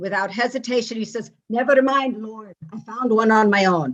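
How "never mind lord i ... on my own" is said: put-on Irish accent in joke-telling style. Telling a joke about a man praying to the Lord, Irish accent. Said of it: "in an Irish accent say".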